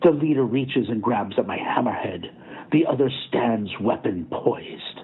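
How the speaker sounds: plain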